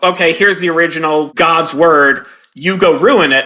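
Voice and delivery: plain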